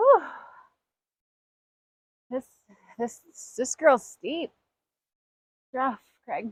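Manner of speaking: loud words pushed out between gasps, out of breath. On a steep stretch, speaking to Craig while out of breath, gasping. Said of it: "we're gasping. Hard to talk".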